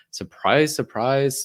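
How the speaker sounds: high, loud, sarcastic jab. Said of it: "I just love how you said that sarcastically".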